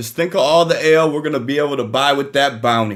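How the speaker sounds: loud, high, hollered yell. Voicing a character walking toward the door: character yelling out. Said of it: "he's yelling out".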